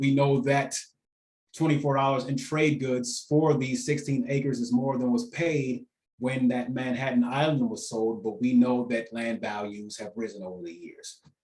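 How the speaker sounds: plain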